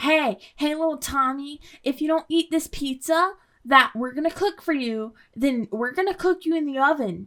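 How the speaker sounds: light, casual, offhand, matter-of-fact adult tone. Mocking adults who threatened a toddler: imitating an adult's casual threat. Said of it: "You just say it like that's gonna be a punishment".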